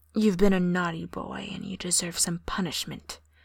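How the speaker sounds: stern, strict, commanding, dominant voice. Trying out different voice styles for a listener: stern, dominant voice. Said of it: "the stern, dominant voice".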